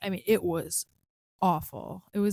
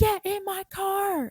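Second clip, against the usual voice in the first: very high, very slow, demanding drawn-out yell; 12 semitones higher than usual. Retelling a taxi driver ordering her into his car, imitating a driver yelling. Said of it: "and then starts yelling".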